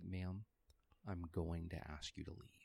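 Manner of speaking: very hushed, soft, slow, deliberate and displeased. Retelling telling a woman to leave, speaking real soft. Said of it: "I started speaking real soft".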